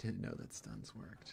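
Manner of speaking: dry, quick, whispered sarcastic tone. A gamer reacting to someone getting stunned, sarcastic. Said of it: "it's me being maybe a little sarcastic here".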